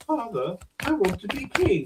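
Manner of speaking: put-on creepy puppet baby voice, very high, slow, swooping. Retelling a puppet sketch from a show: creepy puppet baby voice. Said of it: "this creepy little puppet baby just turns and goes".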